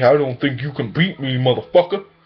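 fully in-character boxer voice, challenging. Retelling Apollo's answer in a movie summary: Apollo Creed impression. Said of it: "Apollo's like".

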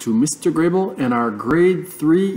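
ordinary delivery

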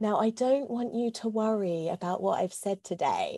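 very patronising, condescending, talking-down tone. Speaker retells what a man said to her at the very end, mock-condescending tone. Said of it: "with a very condescending tone".

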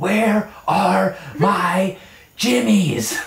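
acted-out scream. Retelling what her husband screamed at her, retelling a scream. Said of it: "you were screaming at me".

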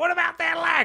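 very high, loud, annoying little orc voice. Retelling a movie scene of an orc horde: little annoying orc voice. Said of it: "trying to be that little annoying orc".

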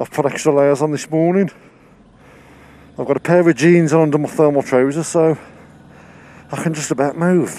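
out of breath. On the way to work in the morning, out of breath. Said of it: "you can probably hear, I'm out of breath".

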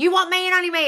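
high, loud, freaked-out scream. Retelling what was screamed at a photo of him with another girl: retelling a scream. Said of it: "I was screaming at the picture".

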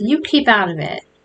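ordinary delivery

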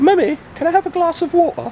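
put-on British accent pitched very high. Imitating a visiting cousin asking his mom for water, imitated British accent. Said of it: "So there you go. That's all you get".

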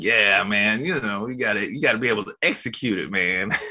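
silky, smooth trading-floor voice. Describing how JJ teaches, the speaker imitates JJ's smooth voice. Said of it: "He's got that smooth voice".

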